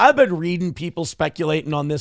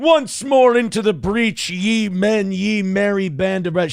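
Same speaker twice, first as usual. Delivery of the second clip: mock rousing battle-speech delivery, higher; 5 semitones higher than usual. Mocking a man's settlement statement as Henry the Fifth's battle speech. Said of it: "Henry the Fifth".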